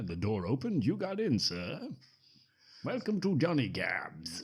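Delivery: put-on posh British accent with a swooping lilt. Retelling a film, the speaker voices the Johnny Cab in a British accent. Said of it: "I don't know why I'm doing that accent".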